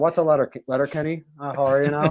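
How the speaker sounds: Canadian accent from Ontario. Answering a request to do the Canadian accent: Ontario accent. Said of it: "Ontario accent".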